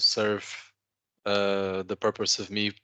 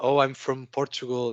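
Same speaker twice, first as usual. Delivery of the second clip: flustered, nervous, blubbering ramble; 4 semitones higher than usual. Retelling answering a policeman at a border crossing: imitating own nervous blubbering. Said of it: "started blubbering about".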